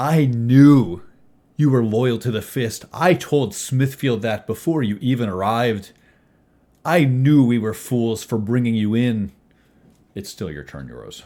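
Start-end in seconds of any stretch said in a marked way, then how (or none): 0.0-9.3 loud, angry growl with knew drawn out. Narrator voicing Samantha Ruthenberg as she growls at the player; Samantha Ruthenberg growling. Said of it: "She growls in your direction".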